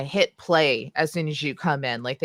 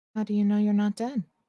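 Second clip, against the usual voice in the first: eerie unison voice of two, higher; 6 semitones higher than usual. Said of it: "talking in the exact same voice".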